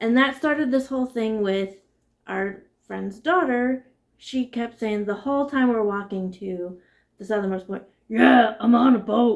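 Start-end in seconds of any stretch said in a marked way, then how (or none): 8.1-9.4 very loud, slow, stretched-out put-on voice. Retelling a nine-year-old girl's catchphrase on a walk: imitating her put-on deep voice. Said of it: "that deep voice came from".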